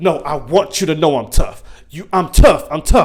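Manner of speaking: mock, overdone, repeated, forced tough-girl insistence. Mocking a show character who insists she is tough: imitating Mary acting tough. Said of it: "the show wanted you to know that she's tough".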